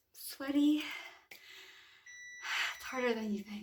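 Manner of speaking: out of breath, long pauses between phrases.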